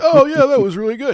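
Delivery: high, loud cheer like a crowd member. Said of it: "you hear people cheering".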